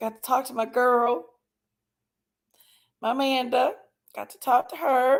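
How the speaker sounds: still a little crying, slightly tearful. Speaker greeting family on an anniversary call, still a little crying. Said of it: "I'm still a little crying here".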